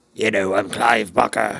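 gravelly voice, gravel in the throat. Describing the author's later readings, the speaker does a gravelly Clive Barker impression. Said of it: "has this like graggle".

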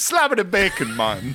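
high, loud mock Jamaican accent.

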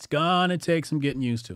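emphatic, gonna leaned on with pitch falling after.

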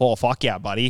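Toronto-accented speech. Comparing how people talk in different places, put-on Toronto accent. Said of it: "that's the same with Toronto".

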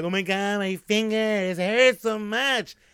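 high, drawn-out sobbing in pain. Retelling going to the parents with a broken finger: imitating own past crying. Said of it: "I'm crying".

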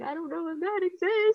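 very high-pitched, tearful crying voice. Retelling going to a husband while crying: imitating own past crying.

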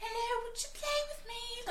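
put-on very high, soft, piping British child voice. Retelling how the doll calls her on the phone: Brahms doll's British kid voice. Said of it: "stereotypical little British kid voice".

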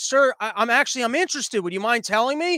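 ordinary talk

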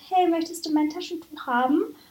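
mock friendly, polite, very nice high sweet tone. Retelling what the speaker said to a man with a runny nose, acting out saying it very nicely. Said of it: "habe ganz nett gesagt".

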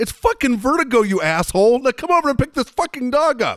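very loud, very high, furious shriek. Retelling how a man yelled at the speaker about the dog: retelling a yell. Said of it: "he just yells at me".

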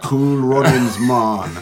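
really bad, exaggerated fake Jamaican accent. Retelling Tubbs pretending to be a crook: bad fake Jamaican accent. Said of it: "doing his really bad fake Jamaican accent".

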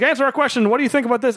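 mock high, clamouring shout. Retelling reporters before a fight: imitating reporters shouting.

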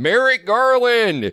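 mock yell, very high-pitched and loud. Recounting calling out from the audience in a theater, retelling a yell. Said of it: "And I just yelled out".

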